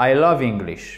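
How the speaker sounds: voice drops, falling intonation at the end on "English". Lesson on intonation, a neutral statement with falling intonation on English. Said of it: "c'est l'intonation descendante".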